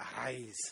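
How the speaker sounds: put-on pirate voice. Leading listeners in repeating a word: pirate voice. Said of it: "like you mean it".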